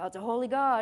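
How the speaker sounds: dark, doom-laden, ominous, foreboding tone. Preaching about phrases people throw around, in a mock-ominous tone. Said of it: "in an ominous tone".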